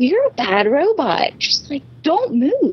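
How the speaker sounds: high, slow, drawn-out scolding voice.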